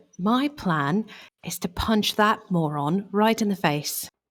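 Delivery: very quiet, slow, hushed undertone. Voicing a character telling the group a plan: said very quietly. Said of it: "she's gonna say this very quietly".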